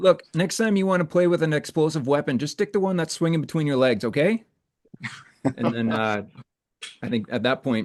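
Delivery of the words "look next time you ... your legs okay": playful, teasing, high chirping tone. Playing a character, chirping back a little at Kade: teasing chirp back. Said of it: "chirping back a little bit at to Kade".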